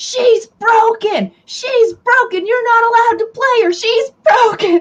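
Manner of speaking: put-on very high, shrill, insistent, protesting yell. Retelling how the teenager yelled during a game: imitating someone yelling. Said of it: "Nia is sitting here yelling".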